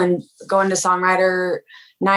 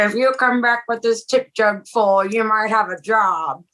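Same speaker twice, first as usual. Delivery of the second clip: put-on gravelly, groveling old-man voice, higher; 3 semitones higher than usual. Retelling how a man with a tip jar offered a job, imitating gravelly old-man voice. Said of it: "he had this like super grovelly voice".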